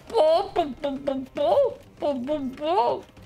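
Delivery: high clucking like a chicken.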